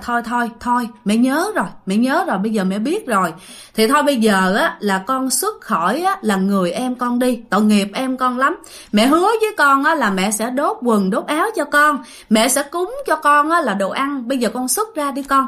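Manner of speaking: ordinary talk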